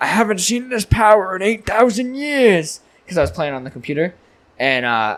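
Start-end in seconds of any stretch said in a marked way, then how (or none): 0.0-2.8 put-on, pitched-up elderly man voice. Retelling a joke posted in the group chat, said in old man voice. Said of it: "I said in old man voice".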